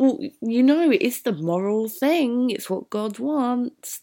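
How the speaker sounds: teasing, playful, half-joking mocking sarcasm. Showing how a character might be joking, in a mocking, playful tone. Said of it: "This like almost mocking, playful tone of voice".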